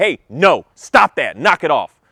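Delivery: stern, commanding parent voice. Showing how a parent tells a child to stop, in a firm voice. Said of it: "I can be firm out of my voice and I can speak like that".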